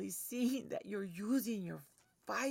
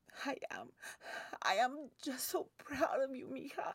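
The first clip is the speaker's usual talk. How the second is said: tearful, pitched-up speech through tears; 6 semitones higher than usual. Answering whether crying, telling the listener how proud: crying while talking. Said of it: "Mama Chona, are you crying?".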